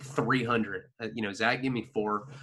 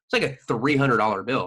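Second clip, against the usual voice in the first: ordinary talk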